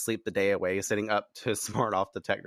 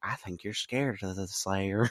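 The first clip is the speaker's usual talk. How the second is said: soft, gentle put-on voice; 4 dB quieter than usual. Retelling a game scene, imitating the younger brother Teddy talking softly. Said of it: "He's like talking really softly".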